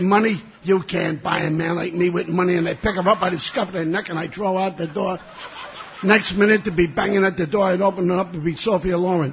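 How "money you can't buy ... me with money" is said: usual speaking voice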